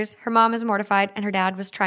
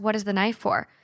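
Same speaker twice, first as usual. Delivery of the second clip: ordinary talk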